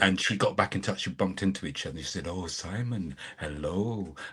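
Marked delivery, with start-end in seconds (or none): 2.3-4.2 soft, affected, put-on voice. Retelling running into a former student's parent: put-on voice for her greeting. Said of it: "I don't know why I made that voice".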